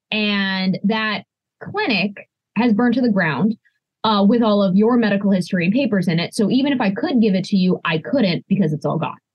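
normal talking voice

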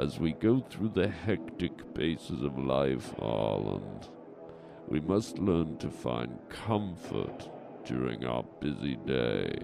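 low, quiet mummy voice. Answering a partner's question about comfort sounds in a comedy bit, in a mummy voice. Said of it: "You sound like a mummy".

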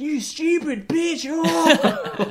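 acted-out shriek, very high, very slow, drawn out. Retelling a group of moviegoers screaming at the screen, retelling screaming at a movie. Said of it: "just screaming".

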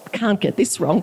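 ordinary delivery

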